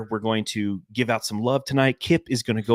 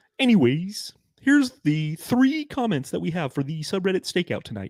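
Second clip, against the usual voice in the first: high-pitched cartoon frog puppet voice; 8 semitones higher than usual. Speaker introducing tonight's subreddit comments, in a Kermit the Frog voice. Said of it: "let's let's do Kermit".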